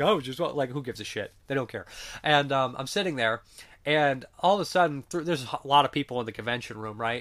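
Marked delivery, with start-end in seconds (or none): none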